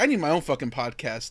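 ordinary delivery

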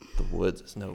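put-on sexy voice. Quoting a cartoon bear's movie line: Martin Lawrence sexy voice. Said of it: "he said it with, with Martin Lawrence, the sexy voice".

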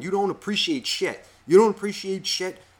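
mock angry yell, high-pitched. Retelling a friend's father yelling at his son, imitating a father yelling. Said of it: "his father's fucking yelling at him".

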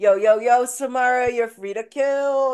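casual hype-up voice, loud, high, slowed.

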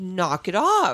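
scolding, telling-off motherly voice. Retelling telling someone off, using a mom voice. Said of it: "you mom voice him?".

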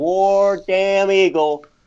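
piercing high-pitched scream. Retelling what a rival's star player screams on screen: imitating Bo Jackson screaming.

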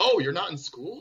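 very high, condescending, acted disbelief and surprise. Retelling what people say to a young person not in school, mock-condescending surprise. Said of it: "It's so condescending".

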